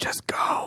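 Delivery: whispering in a character voice. Voicing a character who whispers in an enemy's ear: whispering in character. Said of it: "I whisper in his ear".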